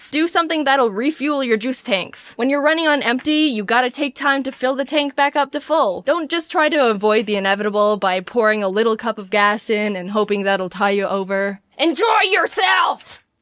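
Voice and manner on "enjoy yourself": high-pitched shouted yell. Giving self-care advice, then yelling: yelling. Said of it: "I'm not yelling at you".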